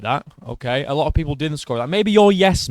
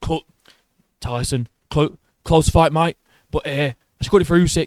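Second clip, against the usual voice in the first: poor delivery, stumbling over the words. Imagining what the promoter would say to the fighter: worst Frank Warren impression. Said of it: "That's the worst Frank Warren impression ever".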